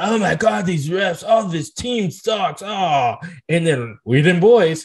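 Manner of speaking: aggrieved, ranting voice of a sore fan. Imitating Cowboys fans on social media during games: imitating Cowboys fans. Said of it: "And Cowboy fans like".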